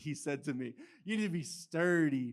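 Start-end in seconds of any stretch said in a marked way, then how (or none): 1.1-2.3 put-on deep-voiced Texan accent. Quoting a man's advice about dating a girl, in a deep Texan accent. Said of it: "he's got this like deep Texan accent".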